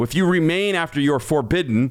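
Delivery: ordinary delivery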